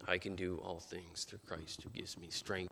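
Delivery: barely audible, faint whisper. Retelling the first words said on waking from a coma: imitating a barely audible whisper. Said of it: "in a barely audible whisper".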